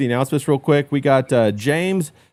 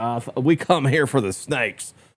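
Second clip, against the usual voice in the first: put-on, casual Southern American accent; 2 semitones lower than usual. Imagining what John would say on a snake hunt: imitating John with a southern accent. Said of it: "southern accent".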